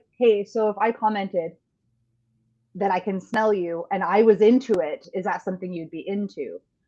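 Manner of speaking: ordinary talk, nothing marked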